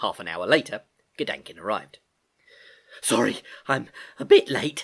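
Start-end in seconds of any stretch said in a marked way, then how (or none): 3.0-4.8 out of breath, breathless. Reading a story aloud, a late girl arriving: breathless. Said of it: "she said breathlessly".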